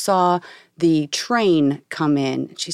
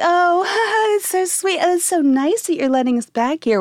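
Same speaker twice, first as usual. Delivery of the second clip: put-on Okie accent. Retelling a circus story, quoting a woman talking to him, imitating her Okie accent. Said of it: "with her accent. She's from New York, but she had an oaky accent".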